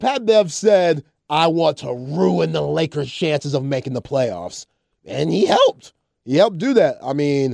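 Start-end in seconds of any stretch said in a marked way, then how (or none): none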